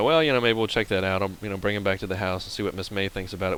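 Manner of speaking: normal talking voice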